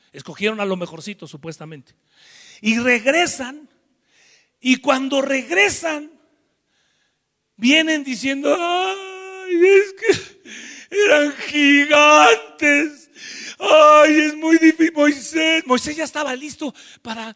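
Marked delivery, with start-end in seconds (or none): 8.5-14.9 mock whiny whimpering, higher and louder. Retelling how the returning spies complained: imitating whiny crying. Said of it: "estos vienen chillando, llorando ahí".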